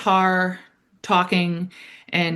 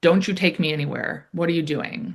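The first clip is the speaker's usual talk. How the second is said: put-on angry woman voice, angry outburst. Retelling a scene where a woman found under a bed reacts: imitating an angry woman. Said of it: "she is angry and is like".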